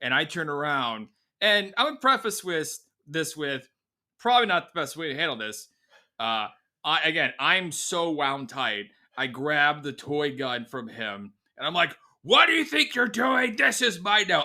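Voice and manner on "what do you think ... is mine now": mock very high-pitched, overblown scolding yell. Retelling grabbing a toy gun from a little kid: retelling own past yelling. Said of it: "I'm yelling at this little kid".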